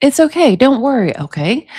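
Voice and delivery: ordinary talk, nothing marked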